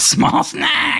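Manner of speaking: very high, creature-like kobold voice. Voicing a kobold mocking a player in a game: kobold voice. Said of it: "And he says".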